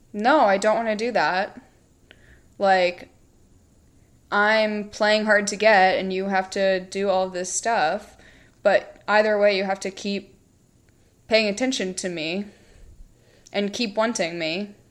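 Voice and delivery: ordinary delivery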